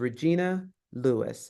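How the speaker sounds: rising Regina, pause, then falling pitch on Lewis. Introducing yourself memorably, with a pause between regina and lewis. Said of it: "notice I have a pause between Regina Lewis. And I even do a rise on the first name and a fall on the last name".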